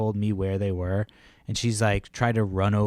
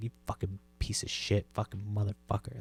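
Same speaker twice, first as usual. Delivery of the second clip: muttered under breath, much quieter; 8 dB quieter than usual. Retelling swearing at a woman once she looked away, muttered under breath. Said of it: "like just under my breath".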